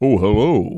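self-serious, solemn, corny cartoon hero voice acting. Mocking the show's stupid voice acting: deep Thundercats voice acting. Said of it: "real deep and stuff".

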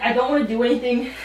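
ordinary delivery

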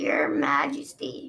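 put-on old man's creaky voice, projected and carrying. Narrator reading Osprey addressing the queen from his boulder: creaky aged Osprey voice. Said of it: "he said in a creaky voice with age".

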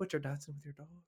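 put-on sorrowful delivery. Quoting a movie line the way it was delivered: imitating a sorrowful delivery. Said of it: "the way he delivered that with, like, such sorrow in his voice".

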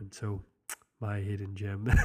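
mock sad voice. Host begins the last segment after a co-host's remark: mock sad voice. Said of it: "Maybe I should talk this like this".

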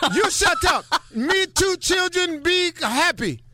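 very high, halting broken English. Speaker acts out a man talking in broken English. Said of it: "a man is talking to you in broken English".

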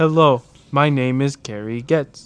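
very slow, drawn-out computer robot voice. Imitating a skate video voiceover: Microsoft Sam voice. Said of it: "the Microsoft Sam voice".

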